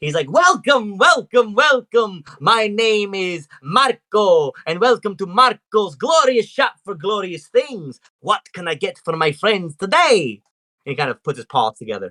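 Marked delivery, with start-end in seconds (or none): 0.3-10.4 grand, fantastic, flamboyant showman voice, big and pitched up. Voicing Marco, a cat-person shopkeeper welcoming customers, flamboyant Marco voice. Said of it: "He's very flamboyant and like seems very like fantastic".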